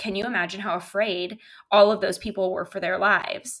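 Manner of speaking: plain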